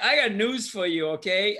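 ordinary delivery

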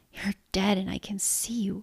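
hushed whisper. Narrator reading a woman's words to another woman, whispering. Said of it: "she whispered".

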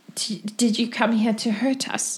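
hushed, soft half-whisper. Voicing a woman in a cell who half-whispers a question. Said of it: "But the woman whispers".

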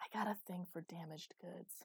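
theatrical whisper. Reading a story aloud, the captor leans in: stage whisper. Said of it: "he lowered his voice into a stage whisper".

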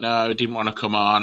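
normal talking voice

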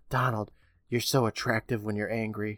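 imitated whisper. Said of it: "She whispers".

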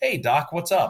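very high, slow, lifted phone voice register. Describing a man getting on the phone, the speaker imitates his higher-pitched voice. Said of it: "he brings his voice like it's a higher pitch".

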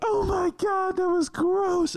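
acted, very high-pitched shrieking with disgust. Telling a story about a mom at the theater, acting out her reaction; retelling a scream. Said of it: "She's just screaming".

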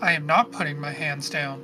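plain

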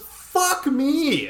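very high, exasperated, frustrated outburst. Retelling a woman's reaction in the storage facility, acting out a frustrated outburst. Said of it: "she's so frustrated".

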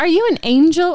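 put-on high, naive twelve-year-old boy voice. Describing a 12-year-old boy who says dumb things, imitating a 12-year-old boy. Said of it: "a 12-year-old boy who says dumb shit like".

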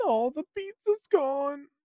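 very high, loud cartoon dog voice. Joking they can only do one voice: Scooby-Doo voice. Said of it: "The only thing I can do is like Scoob".

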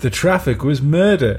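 slow, matter-of-fact American sitcom delivery. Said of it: "like it's some sort of American sitcom".

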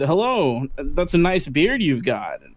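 slow, passive-aggressive manner.

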